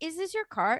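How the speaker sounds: startled and disbelieving, high and shocked. Retelling confronting a shopper about his cart: imitating own shocked question. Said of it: "I said that with shock".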